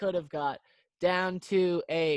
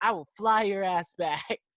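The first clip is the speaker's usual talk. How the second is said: full-on screaming, no holding back; 2 semitones higher, 3 dB louder than usual. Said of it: "he's absolutely screaming at her".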